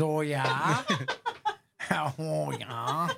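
very slow, swooping, sing-song Wisconsin drawl. After an ice fishing joke, quote a woman's reply in a Wisconsin accent. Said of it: "with her Wisconsin accent".

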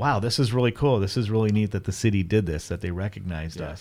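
ordinary talk

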